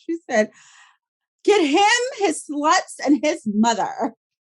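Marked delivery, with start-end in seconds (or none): 1.4-4.1 put-on slow, rich old lady voice.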